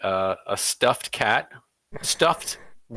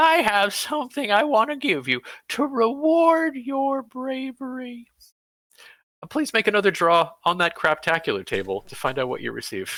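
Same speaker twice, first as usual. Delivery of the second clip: put-on very high, trembling, quavering old-man voice; 12 semitones higher than usual. Game narrator voicing a figure who shuffles up with a cane, quavering voice. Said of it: "he declares in a quavering voice".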